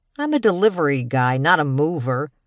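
dismissive, snide, sneering tone. Narrator reads the delivery guy answering the woman's request, snide tone. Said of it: "his tone snide".

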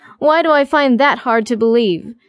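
plain

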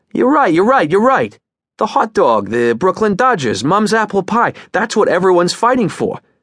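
high, shouted, calling-out voice. Yossarian agrees with Dunbar's declaration, shouting back. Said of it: "Yossarian shouted back".

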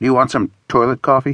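plain

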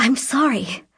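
gasped out, gasping. A woman who has just crashed into a boy and his dog apologizes, gasping. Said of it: "she gasped".

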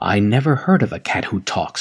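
plain reading voice

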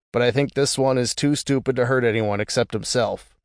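ordinary delivery

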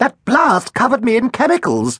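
squeaky, very high voice. Dripping wet after the blast, the doctor explains to the others, squeaking. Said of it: "squeaked Dr. Herdlip".

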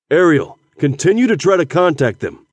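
plain reading voice

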